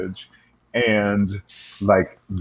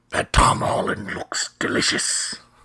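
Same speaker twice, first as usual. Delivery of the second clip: otherworldly creature voice. Answering a question about Spider-Man, speaking as Venom in a Venom voice. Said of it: "I like your Venom voice".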